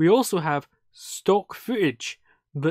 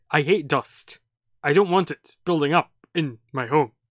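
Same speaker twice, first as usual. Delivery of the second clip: oddly delivered, bizarre, strange line reading. Retelling a film scene where a dad finds dust: imitating a bizarre movie line delivery. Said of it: "the most bizarre delivery I've ever seen".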